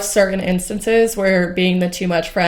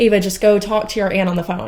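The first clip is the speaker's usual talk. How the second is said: usual speaking voice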